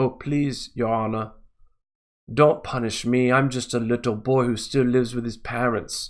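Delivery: put-on Australian accent. Mocking a man's plea to a magistrate, snowflake Australian accent. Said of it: "how kind of accent is it, that?".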